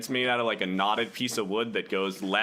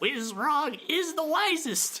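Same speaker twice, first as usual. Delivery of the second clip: very high, drawn-out, proclaiming shout. Describing a character parading around the crystal ball, acting out a shout. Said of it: "just shouting like".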